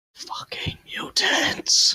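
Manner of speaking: whispered with anger. Whispering in character to a companion about nearby mutants: whispering in character. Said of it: "just whisper".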